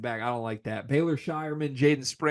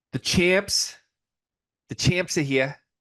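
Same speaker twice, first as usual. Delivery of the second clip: slow, put-on Boston accent; 3 semitones higher, 3 dB louder than usual. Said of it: "I hate Boston accents".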